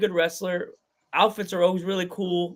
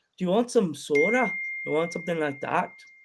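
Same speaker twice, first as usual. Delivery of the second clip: casual, relaxed, put-on Irish accent. Recalling doing it at a show yesterday, in an irish accent. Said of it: "If Ron T was here, he would love you right now".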